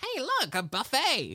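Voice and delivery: high-pitched, drawn-out rat voice. Retelling Rizzo's line on spotting the buffet: imitating Rizzo the Rat. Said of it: "and Rizzo's like".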